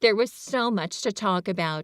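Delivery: plain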